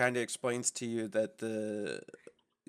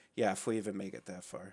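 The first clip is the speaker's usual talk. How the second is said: put-on snarky teen voice laying on heavy sarcasm; 4 semitones lower, 6 dB quieter than usual. Replying in character to a party member: sarcastic, like a teenager. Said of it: "really sarcastic, like a teenager".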